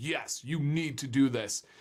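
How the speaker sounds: normal talking voice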